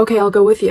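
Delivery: ordinary delivery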